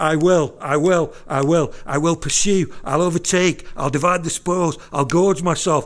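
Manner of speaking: loud, snappy staccato bursts with no breath. Reading verse 9 aloud to show its rhythm, in a staccato machine-gun delivery. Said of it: "It's like a staccato machine gun going off. There's no pause for breath".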